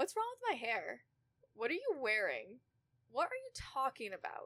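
mocking, snide, sing-song mean-girl voice. Recounting being targeted by girls she thought were friends: imitating the mean girls. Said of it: "It's a perfect voice".

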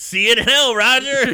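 mock grandfatherly smiling tone. Retelling a film villain's line to his grandkids: imitating a smiling grandpa. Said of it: "he says it with such a great grandpa smile".

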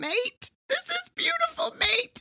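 put-on very high, drawn-out, tearful weeping. Retelling how the master potter praises a teapot: imitating Keith crying.

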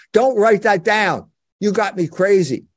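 normal talking voice

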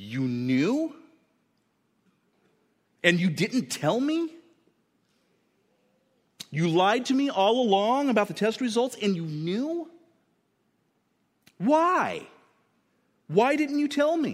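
mock disbelief boiling into anger, pitch climbing high. Acting out a patient confronting a doctor friend: shocked and angry. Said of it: "through all the shock and anger".

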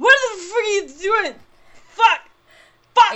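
shrill, very loud, high, enraged shouting at full blast. Playing a character who crit-failed intimidation, marching in: angry yelling. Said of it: "He's like".

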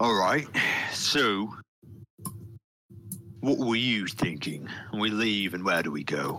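orc war chief voice. In a role-playing game, the narrator voices the orc chieftain: orc chieftain voice. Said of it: "As you see the orc chieftain out with his greatsword and steps out from the orcs".

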